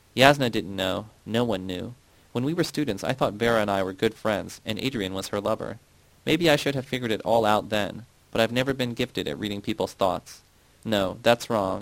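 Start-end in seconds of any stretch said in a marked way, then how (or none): none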